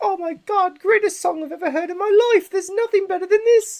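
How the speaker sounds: very high, loud, fake put-on British accent. Speaker imitating comments under a new artist's single, put-on British accent. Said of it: "You sounded really British".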